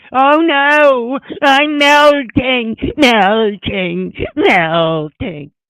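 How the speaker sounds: very high witch voice, drawn-out "no". Questioning a customs code term, the speaker plays the witch: Wicked Witch of the East voice. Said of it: "Is this the Wicked Witch of the East?".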